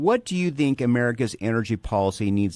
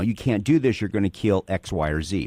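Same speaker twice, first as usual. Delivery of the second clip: ordinary talk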